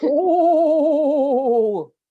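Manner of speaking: very loud, high, drawn-out ghostly ooh. Turning off the video for a surprise, the speaker puts on a scary voice. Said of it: "it's my scary voice".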